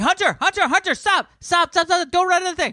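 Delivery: very high, screaming yell. Retelling how a mother stopped her running child: imitating a mom screaming at a child. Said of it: "the best thing I've ever heard anybody scream at a child".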